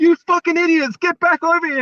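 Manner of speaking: very high, loud, raging angry scream. Retell a player yelling at Khalil Mack and Theo Moore before calling timeout, imitating Justin Tuck screaming. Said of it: "you can see him screaming like".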